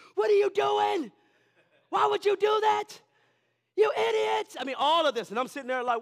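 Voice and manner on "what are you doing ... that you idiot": very shrill, very loud tantrum screaming fit. Retelling how the speaker's oldest child screamed at the youngest, imitating the screaming. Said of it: "he starts screaming".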